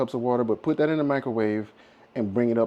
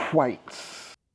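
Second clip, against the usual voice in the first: whites with strongly emphasized h. Host of a baking video calls for egg whites, stressing the H in whites. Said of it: "You're saying it weird".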